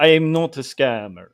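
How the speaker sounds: sounding just like a vampire. In a skit, a caller claiming to head the FBI answers the listener: vampire-like voice. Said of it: "you sound kind of like a vampire".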